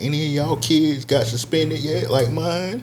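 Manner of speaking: put-on thrilled, excited voice, pitched way up. Retelling a parent asking other parents about suspensions: imitating an excited parent. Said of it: "she was, like, excited".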